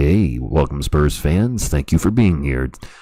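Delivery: deep, really low radio announcer voice. Welcoming spurs fans to his stream, in a really low radio broadcaster voice. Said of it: "I get that really low voice going and say".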